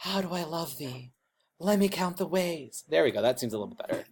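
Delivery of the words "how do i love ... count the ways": hushed, really quiet, gentle voice. Showing how a soft, gentle voice actor reads a love poem; really quiet, soft voice. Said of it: "Notice my voice when I do that is really, really quiet".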